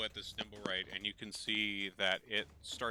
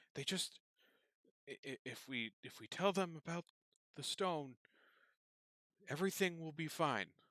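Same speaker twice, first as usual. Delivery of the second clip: hushed whisper, much higher pitch; 7 semitones higher than usual. Narrating a game scene, a man leans toward his wife and whispers. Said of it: "leans towards her and whispers".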